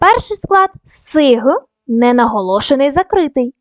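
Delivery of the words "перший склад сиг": syllable сиг said slow and set apart. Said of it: "Даємо характеристику кожному складу".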